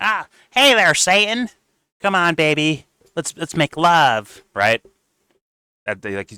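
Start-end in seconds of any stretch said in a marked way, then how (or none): 0.0-4.4 loud, very high, very slow, stretched-out cartoon drawl. Showing how a cartoon voice mocks someone: Saddam from South Park voice. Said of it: "He sounds like Saddam from the older South Park episode".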